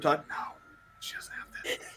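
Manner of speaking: soft, hushed whisper under the breath. Whispering to Todd in character that she does not have this: whispering. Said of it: "and I whisper".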